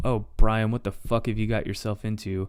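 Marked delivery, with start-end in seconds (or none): none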